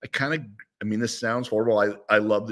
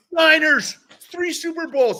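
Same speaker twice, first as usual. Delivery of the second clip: put-on yelling man voice, higher and louder; 5 dB louder than usual. Retelling a signing in a store, imitating Pete Rose yelling. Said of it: "he starts yelling".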